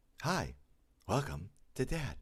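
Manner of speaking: put-on robotic voice, pleasant, nice, high and slow. Showing the voice he uses when playing a role: higher, pleasant, robotic voice. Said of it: "I raise my voice up a little bit. I talk higher and I speak really pleasantly and nice and robotic".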